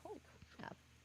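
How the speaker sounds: soft, unvoiced, whispered aside. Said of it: "I'm like".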